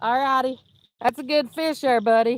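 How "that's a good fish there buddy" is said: raised voice, talking a little louder. Calling out to someone a little away who caught a fish: talking a little louder. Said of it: "Sorry if I was a little loud".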